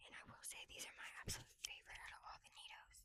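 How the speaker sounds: hushed voice. Showing off a NeeDoh collection to viewers, whispering. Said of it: "Sorry, I'm whispering".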